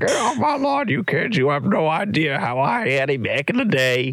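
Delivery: put-on cranky old-timer grumbling voice. Joining in as a pretend grumpy old man: put-on grumpy old man voice. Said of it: "being the grumpy old man".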